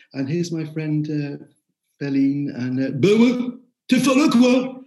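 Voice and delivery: put-on loud, high northern French ch'ti girl's accent. A mother quoting her daughter speaking French, imitating a ch'ti accent. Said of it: "She just became this ch'ti girl".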